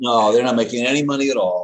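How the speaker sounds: loud, high, dripping with sarcasm. Replying to another speaker's joking remark, sarcastic. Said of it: "did I say that sarcastically enough?".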